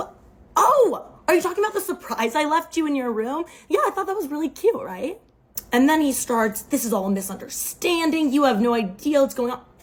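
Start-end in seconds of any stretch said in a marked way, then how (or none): 0.0-5.2 high, play-acted, playing-dumb innocent surprise. Retelling how she played dumb when he confronted her, feigning innocence. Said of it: "And I was like".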